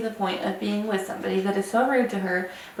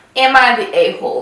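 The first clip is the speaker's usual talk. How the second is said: full-volume, slow, booming, drawn-out yell; 2 semitones higher, 10 dB louder than usual. Starting to read a story aloud to the others: yelling. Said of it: "You're yelling".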